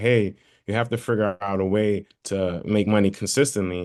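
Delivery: normal talking voice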